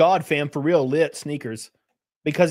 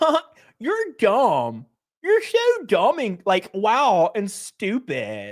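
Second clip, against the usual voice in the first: put-on very slow, swooping, sing-song Valley girl drawl; 5 semitones higher than usual. Mocking a commentator's debate replies: imitating Hasan Piker as Valley girl. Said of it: "talking like a twenty-year-old Valley girl".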